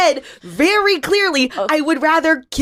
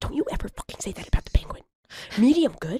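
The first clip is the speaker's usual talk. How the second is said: hushed, whispered, furious scolding tone; 3 semitones lower, 8 dB quieter than usual. Scolding a son in front of a doctor in a scene: quietly angry scolding. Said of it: "she's speaking so quietly instead of yelling".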